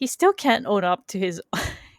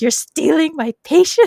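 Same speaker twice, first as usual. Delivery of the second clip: mock, immediately pissed-off outburst, loud and high; 7 semitones higher, 7 dB louder than usual. Retelling how the therapist reacted when she caught him: imitating someone pissed off. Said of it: "She's so immediately pissed because she's like".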